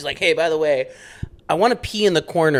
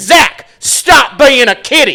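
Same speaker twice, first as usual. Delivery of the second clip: loud, very slow, drawn-out, high scolding yell; 10 semitones higher, 12 dB louder than usual. Retelling how a dad scolded his son in public: imitating a dad yelling. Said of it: "his dad would yell at him in public".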